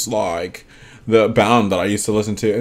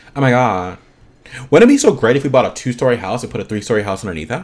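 normal talking voice

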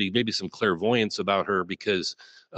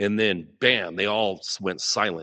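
plain

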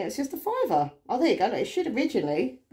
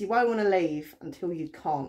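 ordinary talk, nothing marked

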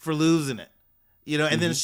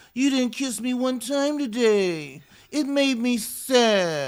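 put-on babyish whine, high, sad and drawn out; 8 semitones higher, 3 dB louder than usual. Retelling how a person talks to them in a baby voice. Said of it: "the whole baby voice".

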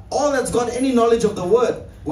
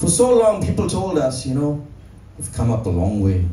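put-on preacher voice, sermon-style delivery; 8 semitones lower than usual. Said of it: "This is my spiritual voice".

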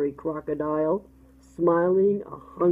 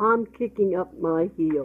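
plain reading voice

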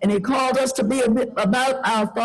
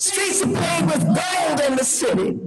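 grand, big, slow, drawn-out preacher voice. Speaker recalls a preacher closing his message to the congregation: retelling in a big voice. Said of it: "and in that big voice".

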